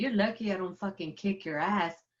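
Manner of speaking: put-on angry, pissed-off, threatening voice. Retelling what a car owner said to a thief: imitating a pissed-off car owner. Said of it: "he was all fucking pissed".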